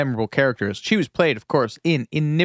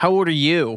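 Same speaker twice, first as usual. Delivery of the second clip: put-on obnoxious teenage girl voice; 4 semitones higher than usual. Retelling how someone turned the question back on her, in Cecile's bratty voice. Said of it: "in Cecile's bratty voice".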